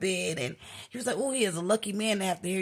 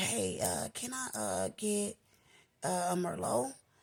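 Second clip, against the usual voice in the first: timid, hushed whisper, very slow; 6 dB quieter than usual. Recounting asking the bartender for a drink at the bar: retelling a whisper. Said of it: "So I whispered to the bartender".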